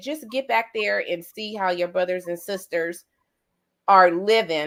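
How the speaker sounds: usual speaking voice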